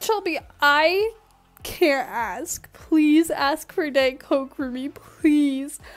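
loud, teary, tearful pleading tone. Retelling how a 15-year-old started tearing up while asking her: imitating someone crying. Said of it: "she starts tearing up and she's like".

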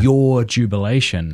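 normal talking voice

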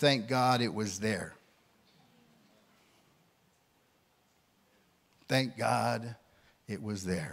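very low, hushed murmur under the breath. Retelling what he said when confronted by urgent need, retelling muttering under breath. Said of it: "I said under my breath".

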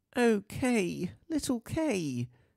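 with a sigh. Narrator reads Gerda's line, sighing. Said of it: "sighed Gerda".

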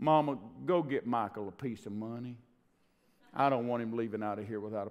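mock slow southern drawl. Retelling what a man said at the end of each visit, in a slow southern drawl. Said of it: "spoke with a very slow kind of a southern drawl".

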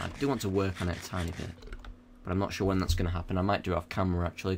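speaking way too fast, rushed and rattled off.

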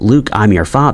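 ordinary delivery

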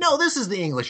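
put-on Chinese accent. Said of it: "I was gonna do the Chinese accent".

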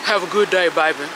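put-on deepest baritone voice.

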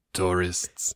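terrible, put-on French accent. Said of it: "terrible French accent of this French janitor".

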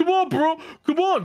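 very high, goading, taunting frat-bro voice. Retelling how a guy ran over wanting to fight, imitating a frat bro. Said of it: "He was a fucking little frat bro".

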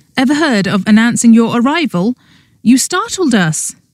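defiant, bold, challenging tone. Startled by a man's sudden arrival, the narrator challenges him: defiant. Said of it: "I glared at him defiantly".

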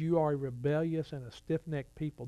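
normal talking voice

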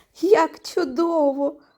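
loud exclaiming in a storytelling voice. Narrator voicing the little hare finding carrots in his bag: exclaiming. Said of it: "Вигукнув він".

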